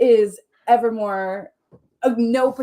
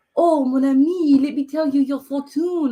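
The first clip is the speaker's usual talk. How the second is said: horrible, exaggerated put-on French accent; 3 semitones higher than usual. Showing how they talked yesterday, in a bad exaggerated French accent. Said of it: "I did my most horrible French accent".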